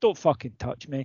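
mock, utterly calm, composed, soft delivery. Speaker retells how a grabbed man answered, retelling a very calm line. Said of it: "very calmly went".

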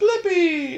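play-acted, shrill, very high child's scream. Parent retelling what their kid does all the time, imitating a child screaming. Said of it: "he just screams".

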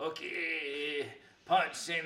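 put-on okay dragged out, Japanese accent. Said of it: "doing like a Miyagi voice".

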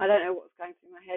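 normal talking voice

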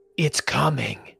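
hoarse, raspy voice from the throat. Narrating a scene and voicing a woman in the story, rasping out the words. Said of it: "she rasps out".

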